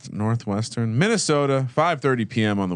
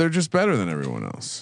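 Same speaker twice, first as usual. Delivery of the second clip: ordinary talk, nothing marked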